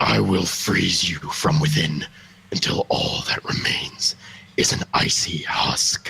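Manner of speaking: low, deep, raspy villain voice. The speaker tries out a Lich King voice. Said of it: "do a Lich King voice real quick".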